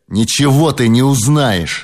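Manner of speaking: scornful, sneering voice. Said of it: "презрительно оскались".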